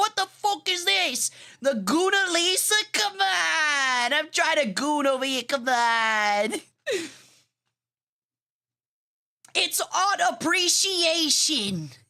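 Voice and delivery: very slow, drawn-out, put-on New York accent. Retelling a man's reaction to a topless Mona Lisa parody, in a New Yorker accent. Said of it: "made me think of a New Yorker accent".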